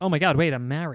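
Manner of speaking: usual speaking voice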